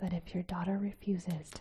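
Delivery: ordinary delivery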